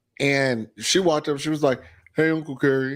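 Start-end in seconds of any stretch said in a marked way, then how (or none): 2.2-3.0 put-on teen voice, higher. Retelling how his former flower girl greeted him, imitating a teenager's voice. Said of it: "What is this voice?".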